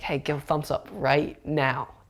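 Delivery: plain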